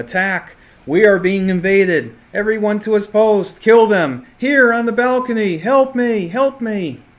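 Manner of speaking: very high, very loud, drawn-out alarmed screaming. Narrating to players as they try to pick a door lock: great big loud scream. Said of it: "you hear a great big loud voice scream".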